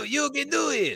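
high rough cheering. Imitating a gymnastics coach cheering an Olympian on: Béla Károlyi voice. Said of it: "exactly how Bella Caroli sounded when he was cheering".

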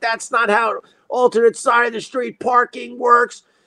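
high-pitched mock screaming and yelling. Retelling own reply in a parking argument: imitating own past yelling. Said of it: "And I'm yelling and screaming at him".

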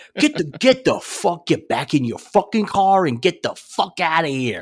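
intense mock tough-guy yell, heavy New York accent. Recounting coming out the door and yelling at someone; retelling a New York-accent yell. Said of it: "Your New York came out".

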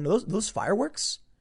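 mock puzzled, high, confused and baffled tone. The speaker mimics a national news reporter looking around: mock-confused question. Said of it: "looking around confused going".

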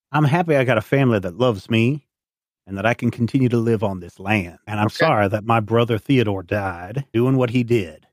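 solemn, deadly earnest, grave voice. Voicing an NPC who locks eyes with a player: dead serious voice. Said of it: "dead serious voice says".

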